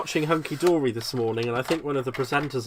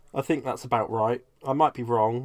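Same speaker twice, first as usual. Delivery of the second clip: ordinary talk, nothing marked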